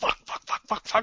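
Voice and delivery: soft, whispered delivery full of panic.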